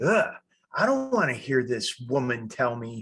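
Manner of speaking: put-on, acted angry reaction. Voicing own inner reaction to the other speaker's advice: acting out getting angry. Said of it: "I'm getting angry".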